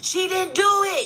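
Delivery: put-on yelling. Retelling what a woman shouted while being placed in an ambulance: imitating someone yelling. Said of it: "she's yelling".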